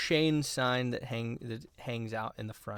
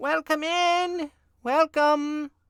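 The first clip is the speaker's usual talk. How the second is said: very high, very loud, hollow, distant call; 9 dB louder than usual. A game master voicing someone calling from the back of a shop: hollow, far-away voice. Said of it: "sort of hollow and like far away".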